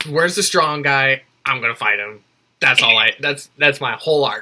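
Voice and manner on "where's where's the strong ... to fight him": bloodthirsty, fight-hungry fighter voice. Describing Battle Beast as a bloodthirsty fighter: imitating a bloodthirsty Battle Beast. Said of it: "just a bloodthirsty version of that".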